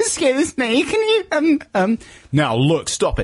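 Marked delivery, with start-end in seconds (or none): 0.0-2.0 mock very high, slow, quavering frightened voice. A podcast host imagines Count Buckley's confronting people in a queue: imitating Count Buckley's frightened voice. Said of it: "his very tremulous, frightened voice".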